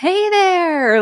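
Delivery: big, loud, high-pitched shout. Retelling a man calling across an arena after leaving his truck, imitating a loud shout. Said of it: "like shouting really loud".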